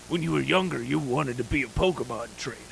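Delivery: put-on weathered, grizzled, old trailer-narrator voiceover voice. Retelling the movie's voiceover by the same old officer: grizzled old guy voiceover. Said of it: "the voiceover's that same grizzled guy going".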